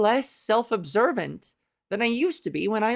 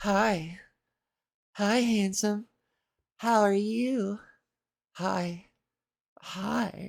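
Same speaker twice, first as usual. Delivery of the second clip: mock sexy voice, quieter; 4 dB quieter than usual. Attempting a seductive greeting bit, in a mock sexy voice. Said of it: "because I'm trying to do sexy voice".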